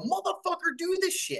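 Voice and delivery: mock very high outburst, finally losing it. Describing the one time people hear after many calm warnings: imitating someone blowing their top. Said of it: "blow your top".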